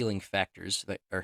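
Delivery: plain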